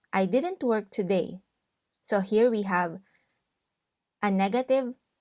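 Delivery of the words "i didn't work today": ordinary talk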